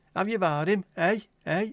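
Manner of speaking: put-on Lancashire accent, loud and high. Redoing the joke line in the accent it calls for: Lancashire accent. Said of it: "a Lancashire accent".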